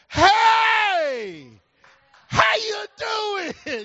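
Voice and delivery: mock booming, loud, very slow, very high voice. Retelling greeting a man walking his dog, re-enacting a loud greeting. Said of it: "I said it so loud".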